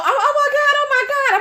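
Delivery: play-acted alarm, very high-pitched put-on panic. Retelling stepping out of the car after being left behind, faking panic. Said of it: "I'm panicking and shit trying to play the role".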